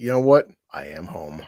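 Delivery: slow, eerie, creepy, drawn-out drawl. Repeating a favourite film line, imitating Sam Neill, creepy. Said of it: "I just love the way Sam Neill says that".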